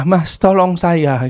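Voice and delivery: put-on gasping, breathless voice. Retelling a woman's plea for help: imitating a gasping plea. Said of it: "sambil terpengah-pengah".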